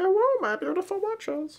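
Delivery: very high voice like a cat. Playing with the cat while filming, speaking as the cat. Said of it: "I'm talking for the cat".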